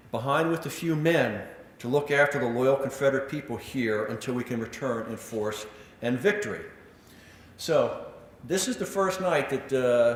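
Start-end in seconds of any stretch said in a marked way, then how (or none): none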